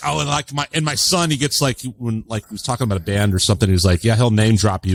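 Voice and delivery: ordinary talk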